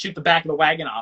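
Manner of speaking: ordinary talk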